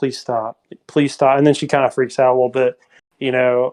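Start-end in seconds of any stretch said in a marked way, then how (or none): 0.0-1.4 pleading, begging voice, repeated word. Recounting a scene, the speaker imitates Sarah's quiet pleading. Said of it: "just kind of quietly like".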